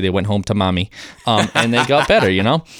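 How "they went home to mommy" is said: ordinary talk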